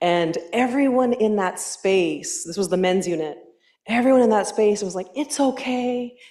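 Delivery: ordinary delivery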